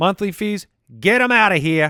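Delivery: a touch of New York accent. Reading a sponsor ad for a checking account app, slight new york accent. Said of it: "That was a little bit of a New York accent".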